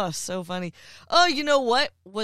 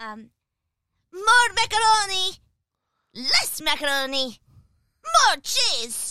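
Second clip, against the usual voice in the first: put-on pitched-up little kid voice; 11 semitones higher, 4 dB louder than usual. Asked to show it, the speaker does Muriel's voice after she turns into a child. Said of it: "I can do that voice very well".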